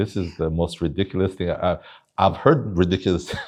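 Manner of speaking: speech breaking up with laughs. Listener reacting to a story about pastors and the wealth gospel, laughing while talking. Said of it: "sorry, I'm laughing".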